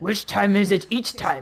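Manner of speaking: crude, put-on caveman voice. Taking his turn, doing it in his best caveman voice. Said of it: "I will do it in my best caveman voice".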